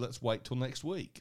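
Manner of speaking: ordinary delivery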